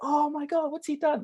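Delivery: very high, astonished, amazed exclamation.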